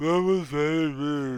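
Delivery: muffled speech. Voicing a creature whose complaint is heard: muffled voice. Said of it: "a muffled".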